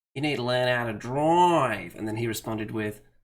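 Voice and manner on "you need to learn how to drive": loud, slow, poor fake Australian accent. Retelling telling another racer to learn to drive, in a bad Australian accent. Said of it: "I realised my accent wasn't that great".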